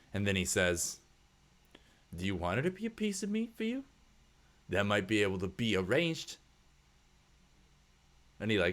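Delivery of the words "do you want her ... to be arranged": changed, suggestive, insinuating tone. Voicing a burly worker who turns suggestive: changed, suggestive tone. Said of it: "His tone, like, kinda changes".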